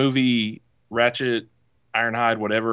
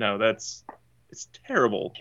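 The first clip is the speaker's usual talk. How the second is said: ordinary delivery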